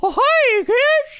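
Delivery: very high, little cartoon mouse voice. Asked to try Mickey Mouse, a speaker does a Mickey Mouse voice. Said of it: "Mickey Mouse is just like".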